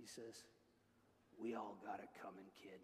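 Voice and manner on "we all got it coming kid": very deep, very quiet gravelly murmur under the breath. Retelling a movie character's reply to a justification, in a gravelly Clint Eastwood voice. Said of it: "gravelly voice".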